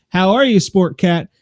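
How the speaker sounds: ordinary talk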